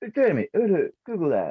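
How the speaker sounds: high, loud calling-out voice. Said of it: "So it's".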